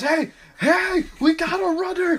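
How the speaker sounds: very high, very slow, drawn-out alarmed cry. Retelling to a friend how an agent called out when a man ran off, as a put-on alarmed call. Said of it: "agent calls out as man runs".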